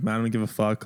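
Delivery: ordinary delivery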